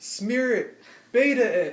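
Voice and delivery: very high, drawn-out hollered yell. Retelling a friend coaching from below the climbing wall: imitating someone yelling. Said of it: "he's yelling".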